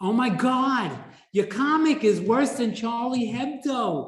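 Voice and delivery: high, loud woman's voice. Retelling how Aline reacted to the comic, in an Aline impression. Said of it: "I'm saying it in her voice".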